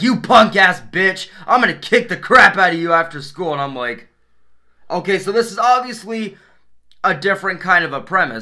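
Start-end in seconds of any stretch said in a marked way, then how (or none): 0.0-3.5 put-on threatening tone, louder. Retelling a cartoon scene, quoting a jock threatening a character: imitating a threatening jock. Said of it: "this jock straight up comes up to Beavis and he's like".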